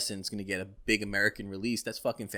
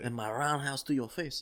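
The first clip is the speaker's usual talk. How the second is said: fake French accent, said quieter; 4 semitones higher, 5 dB quieter than usual. Acting out a soldier character's lines in a fake French accent. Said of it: "with that fucking French accent".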